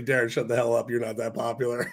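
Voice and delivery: ordinary talk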